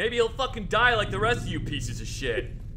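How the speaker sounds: bad put-on surfer-dude voice, wide pitch swings.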